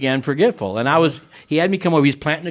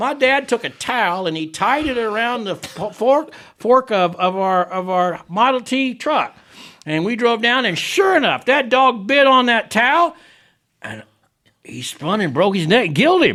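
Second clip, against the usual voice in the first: high, pitchy storytelling preacher voice; 8 semitones higher than usual. Speaker retells what a man said while talking about sin, imitating his high pitchy voice. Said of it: "He had a real pitchy voice".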